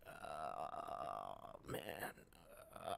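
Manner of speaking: very soft, barely voiced, whispery creaking vocal fry. Speaker demonstrates the deeper voice they were told to use, vocal fry. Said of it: "you'd have to do a vocal fry".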